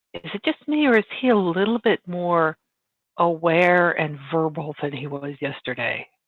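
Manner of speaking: speaking in a whisper. Voicing a character who asks the group about another: whispering. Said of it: "whispers to them".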